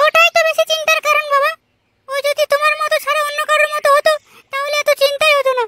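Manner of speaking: put-on high-pitched, loud young woman voice.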